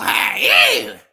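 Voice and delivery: shrill, high, loud put-on character shout. Giving shout-outs, saying hey in a Rasputia voice. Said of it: "in my Rasputia voice".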